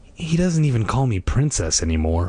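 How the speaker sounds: plain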